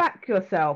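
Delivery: put-on very strong, broad London accent. Recalling a phrase they once said, the speaker repeats it in a very London accent. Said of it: "And I said it in my very London accent".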